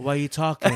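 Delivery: pointed, rebuking put-down tone. Imitating the co-host's question about why he keeps talking: imitating Tom. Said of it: "you give me the".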